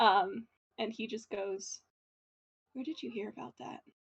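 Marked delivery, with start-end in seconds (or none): 2.7-3.8 very hushed, very quiet, hurried, quick lowered voice. At a crime scene, a character asks you so nobody else can hear, lowered voice. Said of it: "he lowers his voice so that nobody else at the crime scene can hear him".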